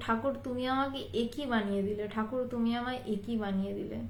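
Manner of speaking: ordinary talk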